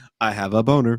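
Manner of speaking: mock, totally poker-faced, low, dead-straight deadpan. Retelling a school story, speaker imitates a kid on the bus: imitating a deadpan kid. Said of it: "He would say it so deadpan".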